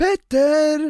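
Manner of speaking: very high, loud called-out name. Retelling how someone called a name across a crowd: imitating someone calling out. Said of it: "Och sen".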